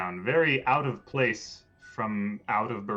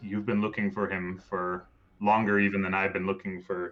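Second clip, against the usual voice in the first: ordinary talk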